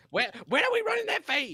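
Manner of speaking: very high, sing-song, swooping, animated voice. Doing a quick impersonation of Drea for the others: imitating Drea. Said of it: "Is that your impersonation of her?".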